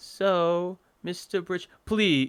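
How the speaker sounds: put-on high-pitched British accent, drawn-out "so". Playing the nurse, addressing Mister Bridge: higher-pitched British accent. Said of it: "nurse is in a higher pitched British accent".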